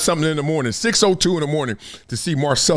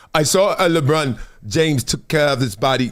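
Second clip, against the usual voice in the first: halting, fumbling read-aloud, tripping once. Reading a quote aloud about LeBron's discipline: Luka Dončić voice. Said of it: "I'm supposed to be reading it like Luka".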